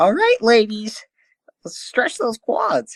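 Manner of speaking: voice breaking mid-line. Chiming in to imitate the same guy being discussed, with a voice-crack impression. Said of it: "he has the best voice crack ever too".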